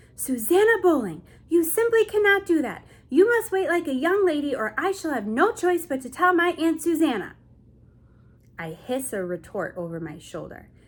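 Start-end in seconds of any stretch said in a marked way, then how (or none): 0.2-7.4 shrill, loud, angry scolding tone. Narrating a girl calling angrily after her cousin: shrill, angry voice. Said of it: "in a shrill-laced voice with anger".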